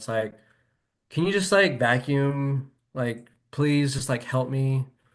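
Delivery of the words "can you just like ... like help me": put-on annoyed, irritated tone. Retelling asking a partner to vacuum: imitating own annoyed tone. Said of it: "I'd do it in that kind of tone".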